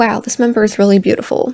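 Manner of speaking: ordinary talk, nothing marked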